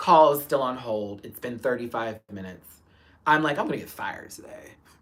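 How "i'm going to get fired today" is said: mock breathy, whispered, upset, worried dismay. Retelling waiting on a held call during the drama: imitating own upset. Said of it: "I was so upset".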